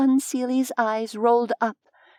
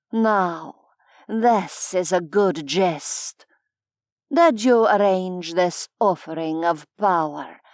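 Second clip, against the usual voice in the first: catlike purr through the words; 5 semitones lower than usual. Reading a scene, the fae queen amused by a deflected attack: purring voice. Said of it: "her voice a purr".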